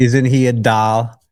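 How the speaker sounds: put-on Upper Midwest, North Dakota accent. Quoting a woman from Fargo, North Dakota, in her Fargo, North Dakota accent. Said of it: "she had this incredible accent".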